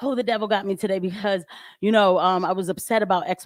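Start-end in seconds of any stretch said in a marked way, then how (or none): none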